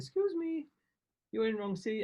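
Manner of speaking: put-on high, genteel little voice with Japanese accent. Retelling someone addressing the sleeping speaker an hour into a flight: genteel little japanese voice. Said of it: "this really genteel little Japanese voice going".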